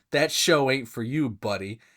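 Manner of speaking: mocking, put-on condescending tone. Retelling a little sister's group chat reply, mocking condescending voice. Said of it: "in her most condescending voice".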